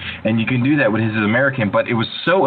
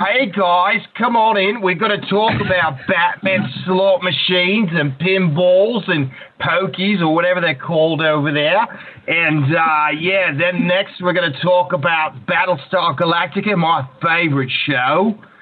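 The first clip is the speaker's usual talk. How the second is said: put-on Australian accent, pitched up, chatty host style; 7 semitones higher than usual. Acting out greeting viewers of a bootleg call-in show: australian accent. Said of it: "you've mastered the Australian accent".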